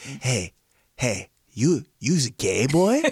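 put-on very drawn-out, slow, drunk uncle drawl. Showing how an uncle always talks: imitating an uncle. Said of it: "that's how he talks".

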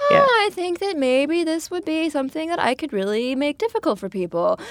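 animated, swooping, sing-song, high put-on voice. Retelling what John said about creating packaging for a brand: imitating John. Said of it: "You sort of just sounded like John".

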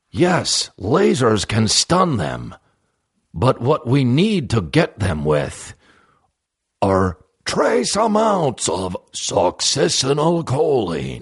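put-on heroic robot voice. Rallying the Autobots against Megatron: Optimus Prime voice. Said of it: "Why is he fucking Optimus Prime".

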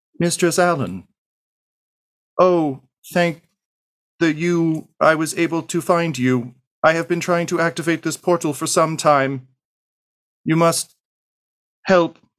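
very high, wavering, warbling robotic voice. A badly damaged, sparking robot finds you and speaks, warbling robot voice. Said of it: "who in a warbling voice says".

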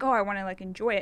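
ordinary delivery

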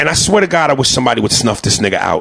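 ordinary delivery

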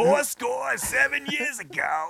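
very high, very slow Jersey accent, every word drawn out. Saying a famous quote in a put-on voice: Gilbert Gottfried voice. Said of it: "I thought it was more like Gilbert Gottfried".

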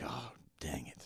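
put-on soft, dismayed, childlike whisper under the breath.

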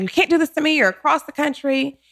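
high, freaked-out, panicked blurting. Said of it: "all freaked out".

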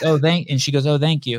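normal talking voice

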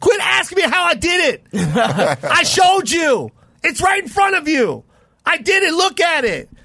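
very high, drawn-out, top-of-the-lungs screaming. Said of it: "screaming at the top of his lungs".

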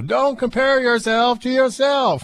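very high-pitched, slow, mild yell. Quoting advice, saying it like Doctor Phil with a little yelling. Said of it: "You gotta say it like Doctor Phil".

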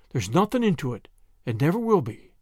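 ordinary delivery

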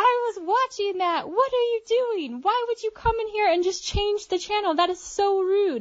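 shrill, furious, high-pitched angry yelling. Retelling how a woman at the gym yelled at her: imitating an angry woman yelling. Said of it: "Just started yelling at me and getting in my face and was super angry".

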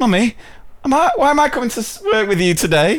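put-on very high, sing-song small child's voice. A mother retells her child calling from the back seat, small child voice. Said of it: "I love the voice".

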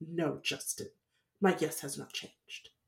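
soft, scornful, disdainful brush-off. Retelling how she answered the man's question after an argument, mock-disdainful. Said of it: "she says with such disdain".

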